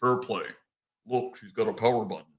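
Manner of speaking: deep, soft wrestler voice. Retelling what a wrestler said at a strip club, Low Ki's real deep voice. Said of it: "he has this real deep voice".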